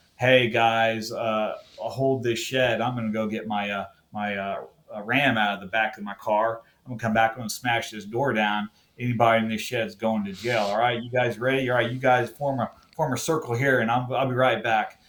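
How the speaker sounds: usual speaking voice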